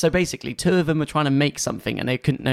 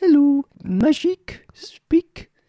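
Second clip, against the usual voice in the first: put-on French accent, pitched very high; 12 semitones higher, 4 dB louder than usual. Imitating a puppet character's voice: Tilly's French accent. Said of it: "Tilly's voice is lovely, the French accent".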